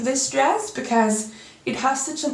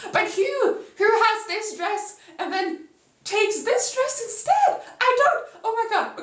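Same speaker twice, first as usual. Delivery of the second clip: voice cracking and breaking, pitched very high; 11 semitones higher than usual. Complaining about a dress change in a show, voice breaking. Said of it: "My voice is like literally breaking".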